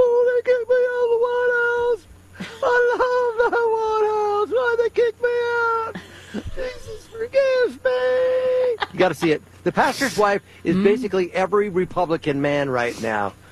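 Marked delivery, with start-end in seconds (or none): 0.0-8.9 very high mumble with me drawn out. Imagining Trump face down in the reflecting pool: Trump mumbling, high-pitched. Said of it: "mumbling to himself in a high-pitched voice".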